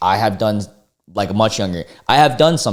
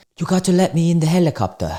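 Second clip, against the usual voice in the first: bad put-on British accent, pitched up; 9 semitones higher than usual. Voicing a man asking to be let into a helicopter, bad british accent. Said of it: "let's do a British accent".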